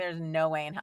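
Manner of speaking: ordinary talk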